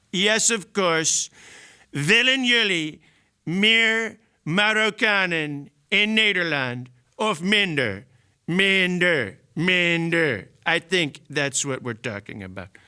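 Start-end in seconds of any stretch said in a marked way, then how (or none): 1.9-10.5 put-on Dutch accent with speech-making delivery. Answering a viewer's request for a Trump Dutch accent: Trump voice with Dutch accent. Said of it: "can you do a Trump Dutch accent?".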